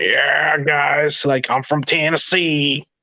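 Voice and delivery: slow, arrogant, cocky, full-of-himself swagger. Describing a cocky, arrogant wrestler he once interviewed: imitating a cocky wrestler's talk. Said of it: "he would talk like this".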